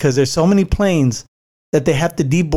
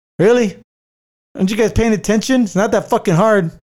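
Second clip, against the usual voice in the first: irritated, pissed-off griping, pitched up; 6 semitones higher than usual. Retelling a man at boarding complaining about people cutting the line, imitating a pissed-off man. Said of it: "He's pissed off".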